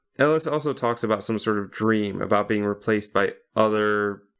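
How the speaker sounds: ordinary talk, nothing marked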